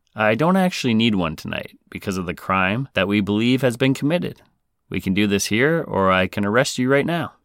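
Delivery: normal talking voice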